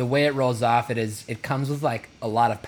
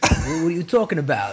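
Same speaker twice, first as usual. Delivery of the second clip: put-on New York accent, higher; 5 semitones higher, 4 dB louder than usual. Showing the usual gesture for doing accents: new york accent. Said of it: "You kinda put your arms up, you go".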